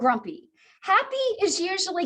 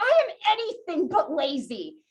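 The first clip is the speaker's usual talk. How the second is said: put-on, thoroughly affronted, indignant and offended tone. Retelling a reply to being tagged lazy: imitating own indignant reply. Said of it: "I got really indignant".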